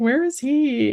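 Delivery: sobbing, crying voice pitched very high. Retelling a dentist visit, imitating own crying. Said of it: "crying, I was like".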